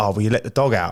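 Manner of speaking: plain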